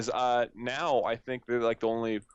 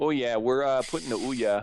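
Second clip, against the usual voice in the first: put-on mock Canadian accent; 3 dB louder than usual. Imitating a company announcement in a put-on canadian accent. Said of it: "Canadian or something with this accent".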